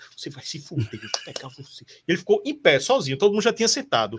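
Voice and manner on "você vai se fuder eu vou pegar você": quieter, muttered swearing under the breath. Retelling a fan cursing the referee at a match: imitating someone cursing quietly. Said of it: "falando baixinho".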